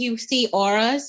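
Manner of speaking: ordinary talk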